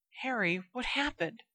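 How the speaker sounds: shaky, trembling, high half-whisper. Reading a story aloud, voicing a character's line, shaky half-whisper. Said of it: "whispered Hermione's shaking voice".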